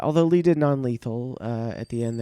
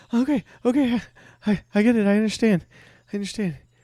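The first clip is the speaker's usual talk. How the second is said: very high-pitched, frightened, stumbling pleading; 10 semitones higher, 4 dB louder than usual. Voicing a captive facing a growling bear: terrified captive pleading. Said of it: "He's like".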